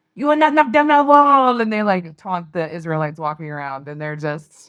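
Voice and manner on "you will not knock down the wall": put-on taunting, very high, loud French accent. Retelling the french peas taunting from the top of the wall, french accent. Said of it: "they had French accents".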